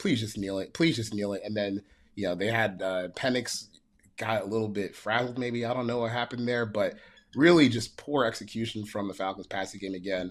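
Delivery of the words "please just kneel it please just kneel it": desperate, helpless, pleading and begging tone. Retelling watching the end of the game, imitating own past begging. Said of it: "I was just begging".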